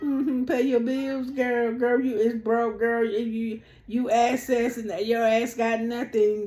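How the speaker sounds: easygoing mockery through laughter. Retelling an argument, imitating Angela's calm laughing taunts: imitating Angela's cool taunting. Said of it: "She gonna be like how she was".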